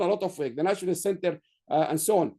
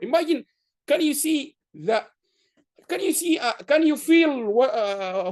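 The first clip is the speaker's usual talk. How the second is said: raised, higher voice, groping for words; 7 semitones higher, 4 dB louder than usual. A speaker recalling meeting a Nobel laureate keynote speaker, in a raised voice. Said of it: "why I am raising my voice here?".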